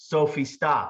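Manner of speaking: flat falling intonation, said as statement. Teaching how to sound authoritative by dropping the question mark, falling command, no question. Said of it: "I took the question mark off the end".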